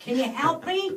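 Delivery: shrill, very high-pitched, loud scream. Retelling calling to the kids for help: imitating own screaming. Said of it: "screaming to my kids".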